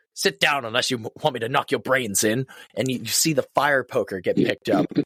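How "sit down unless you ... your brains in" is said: put-on firm, commanding British accent. Retelling a film scene where the invisible man threatens Kemp: Claude's commanding British accent. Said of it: "Claude's commanding British accent".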